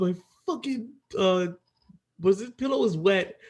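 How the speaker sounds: high, stumbling, screamed outburst. Retelling a wet night in the tent: imitating Nevi screaming. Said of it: "All you hear is this guy screaming".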